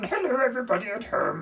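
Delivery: sage alien voice. Greeting viewers at home while doing a Yoda impression. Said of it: "Today I get to do my Yoda impression".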